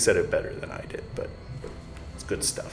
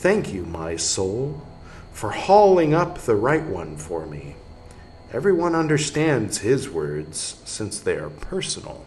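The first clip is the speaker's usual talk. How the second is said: normal talking voice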